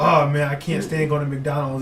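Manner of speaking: ordinary talk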